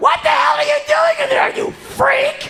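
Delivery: screaming at full volume, very high and piercing. Retelling a coworker shouting through the bathroom door: imitating Heidi yelling. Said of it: "She only yells".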